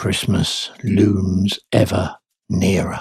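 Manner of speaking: hushed, quiet delivery. Radio presenter on a Thursday morning show, speaking in hushed tones. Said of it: "says he in hushed tones".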